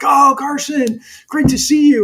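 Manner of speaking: put-on delighted, eager voice. Retelling how someone met them in a hallway: imitating an excited greeting. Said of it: "he was so excited".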